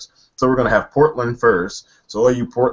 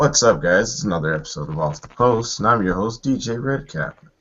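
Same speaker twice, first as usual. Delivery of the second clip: smooth, silky put-on radio host voice. Podcast host opens an episode, put-on smooth voice. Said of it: "I like this voice I talk in now".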